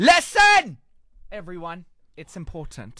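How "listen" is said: shrill, very high-pitched shouting yell. Radio host opening a morning show on 5fm, calling for everyone's attention, shouting. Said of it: "Why are you shouting".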